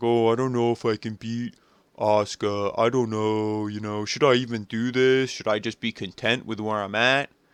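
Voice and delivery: mock somber, sad, self-doubting musing aloud. Retelling a wrestler's sad promo: imitating Becky sounding sad. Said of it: "she's all sad".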